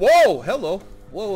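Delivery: high, startled, frightened yelp. Playing a game when a skeleton suddenly appears, startled yell. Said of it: "I didn't mean to yell in your ear there".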